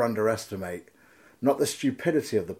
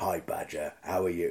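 rough, sinister, deep, gravelly put-on voice; 4 semitones lower, 5 dB quieter than usual. Recalling a voice they always liked, then imitating it: deep gravelly put-on voice. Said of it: "He had this lovely gravelly voice. ... It was like really deep".

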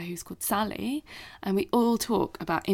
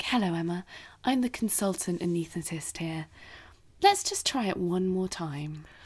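put-on super calm, composed, reassuring voice. Retelling how the consultant anaesthetist spoke to her, imitating a super calm voice. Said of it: "got this super calm voice".

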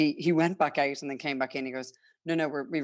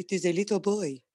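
put-on French accent, pitched up; 5 semitones higher than usual. Speaker retelling what he said at the birth: imitating his french accent. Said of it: "His French accent".

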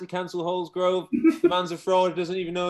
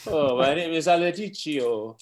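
bad, put-on, fake Spanish accent; 3 semitones lower than usual. Retelling a Talksport bit, imitating Sam Allardyce's fake Spanish accent. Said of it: "put on, like, a fake Spanish accent and went".

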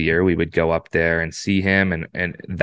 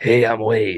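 raspy, rasped-out voice; 4 semitones higher than usual. Retell turning the corner and Wade sticking his hand out to introduce himself, in Wade's raspy voice. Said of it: "like raspy voice".

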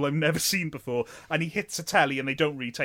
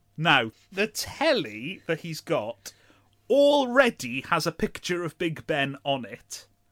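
usual speaking voice

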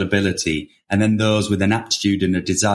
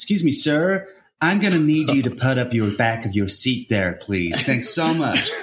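polite American flight attendant voice, pitched up; 5 semitones higher than usual. Retelling what a flight attendant said on the flight: imitating an American air stewardess. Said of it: "the air stewardess, ... She would go".

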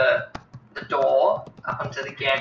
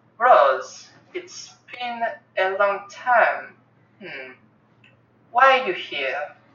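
high, very feminine voice from a male speaker; 5 semitones higher than usual. Voicing the vassal who stands and speaks to Rose, in a feminine voice. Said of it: "And this is the voice of the vassal. ... Well, it is a man that's standing there, but it is a very feminine voice that's coming from this person".

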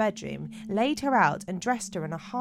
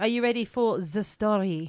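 slow, drawn-out, put-on French accent. Asking the other speaker if they're ready for the story: French accent. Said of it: "I said that in a French accent".

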